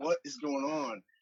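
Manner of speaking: put-on jumpy, frightened, paranoid, high-pitched voice. Retelling a phone call, quoting her: imitating someone paranoid. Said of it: "I could tell in her voice that she was".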